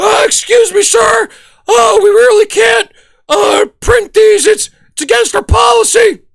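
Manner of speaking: put-on young teen voice, politely stammering and stumbling. Retelling what the eighteen-year-old clerk said to him, pimply teen from The Simpsons. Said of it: "he's like the pimply faced kid from The Simpsons".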